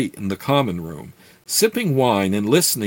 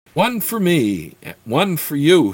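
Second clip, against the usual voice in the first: rising cackling laugh through the words; 4 semitones higher than usual. A thin elf orders drinks from a serving wench, with a rising cackle. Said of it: "he said with a rising cackle".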